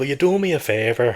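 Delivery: slow, put-on southern Irish Cork accent. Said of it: "you're definitely doing more of a South, like, Cork, Kerry".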